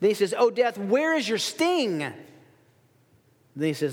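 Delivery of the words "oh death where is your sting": put-on mocking, taunting tone, higher pitch. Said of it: "there's a mocking tone that Paul speaks".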